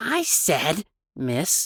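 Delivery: low and threatening voice. Dmitri answers the woman holding a stick, low, threatening voice. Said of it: "he finally spoke in a low, threatening voice".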